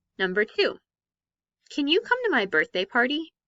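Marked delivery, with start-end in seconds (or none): 1.7-3.3 rising tune, voice climbing at the end on party. Example sentence ending in a question mark, rising at the end. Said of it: "Can you hear how my voice went up at the end of that sentence?".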